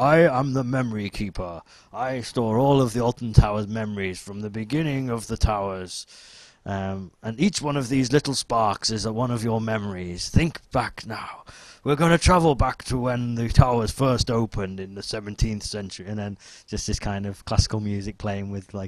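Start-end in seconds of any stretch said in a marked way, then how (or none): 0.0-16.1 big, booming show narrator voice. Retelling the story told at a fireworks show, imitating a booming voice. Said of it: "there's this kind of booming voice and it was like".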